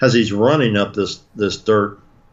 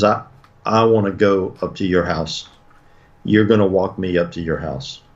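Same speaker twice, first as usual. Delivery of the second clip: mocking imitation of a cold, flat monotone. Storyteller quotes a boy speaking to Harold, imitating a cold monotone voice. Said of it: "in a very cold, monotone voice".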